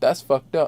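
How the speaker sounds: mock belittling, demeaning, scornful tone. Retelling a remark made while looking behind someone: imitating own demeaning tone. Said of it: "demeaning tone".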